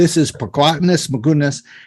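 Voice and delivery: put-on New York accent, laid on thick. Describing a plant expert they watched, imitating his thick New York accent. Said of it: "His accent is the thickest".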